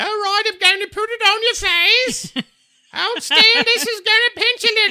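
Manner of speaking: put-on very loud, very high, regal queenly posh accent. Describing the powder lady at a BlizzCon Q&A, imitating her queen-like accent. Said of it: "She was like the queen".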